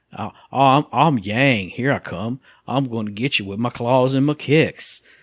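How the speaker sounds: slow, drawled Southern accent. Showing the voice they gave the character: Yang with a Southern accent. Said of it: "I made him like a Southern guy".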